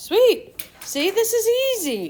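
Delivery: high, loud delighted cheer.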